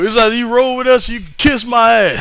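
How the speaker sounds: high put-on country accent. Retelling a wrestler's funny promo after the match: imitating Jay's country accent. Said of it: "Jay in that country accent".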